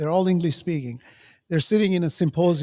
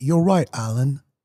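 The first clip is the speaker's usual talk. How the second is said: put-on British accent; 4 semitones lower than usual. Quoting ChatGPT's answer to him, ChatGPT with British accent. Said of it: "with his British accent".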